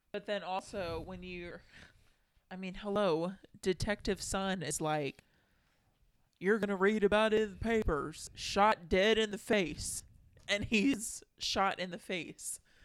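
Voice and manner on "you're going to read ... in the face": put-on Savannah, Georgia Southern accent. Recapping the story, the speaker quotes Detective Sun: Detective Sun, Savannah accent. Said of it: "I don't think they talk with a Savannah accent up in Boston".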